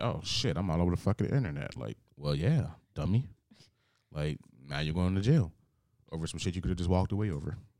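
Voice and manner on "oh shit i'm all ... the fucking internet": normal talking voice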